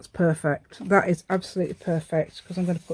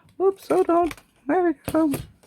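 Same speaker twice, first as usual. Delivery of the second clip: very high-pitched, squeaky cartoon voice; 11 semitones higher, 3 dB louder than usual. Making little tabs while crafting, accidentally slipping into a Mickey Mouse voice. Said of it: "Don't know why I'm going into a Mickey Mouse voice".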